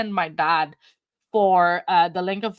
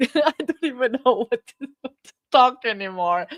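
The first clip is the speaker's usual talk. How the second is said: fast speech through nervous laughter; 4 semitones higher than usual. Waiting for dad to join the live stream: nervous laughing while talking. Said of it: "now I'm just laughing and just scared".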